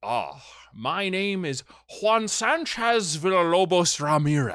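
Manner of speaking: put-on speaking with Scottish accent. Retelling a scene, the speaker voices Sean Connery introducing himself: Sean Connery's Scottish accent. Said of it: "In his Scottish accent".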